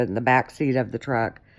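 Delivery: back seat said with stress. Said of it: "not in the back of the truck".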